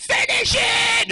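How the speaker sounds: very high, loud, shrieking villain scream. Retelling a scene where a woman prays at night, Green Goblin screaming. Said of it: "and he's screaming".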